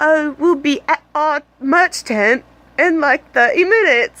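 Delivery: clumsy, bad put-on Australian accent. Speaker quotes a band member after their set, bad Australian accent. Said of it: "in his Australian accent".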